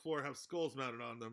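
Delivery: plain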